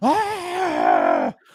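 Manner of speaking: high, loud, panicked scream. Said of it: "And they're screaming".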